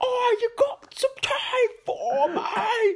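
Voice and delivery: put-on very high, slow, drawn-out heavy Cockney accent. Describing a wife who is always screaming things, in a really hardcore cockney accent. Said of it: "really hardcore Cockney accent".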